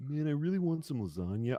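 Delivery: chill, lazy cartoon cat voice with swinging pitch. Telling another speaker his voice has a Garfield vibe, in a Garfield voice. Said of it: "Garfield to your voice. Where if you were like".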